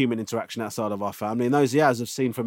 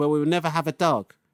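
put-on tearful, crying little boy voice; 4 semitones higher than usual. Father recounting what his son replied one night, imitating a crying child. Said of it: "I don't know why I did that voice".

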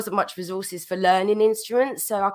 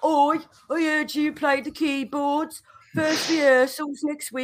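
put-on Birmingham Brummie accent, pitched up; 7 semitones higher than usual. Retelling how an older band member told her about her first rehearsal, brummie accent. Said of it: "That is a Brummy accent".

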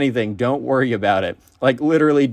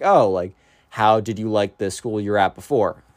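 put-on awkward speaking, lower pitch; 3 semitones lower than usual. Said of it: "very, like, awkwardly be like".

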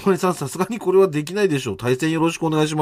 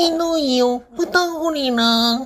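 put-on cartoon boy voice, higher; 10 semitones higher than usual. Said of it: "車のモノマネ、 え、 とんがりです。".

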